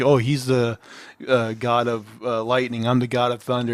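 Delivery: ordinary talk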